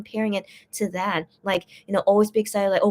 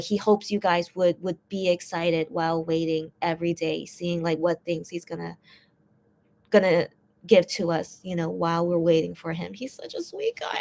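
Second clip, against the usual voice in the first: tearful, choked-up voice catching; 3 semitones lower than usual. Speaker talking about a guy they admire, tearing up. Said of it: "I'm tearing up again".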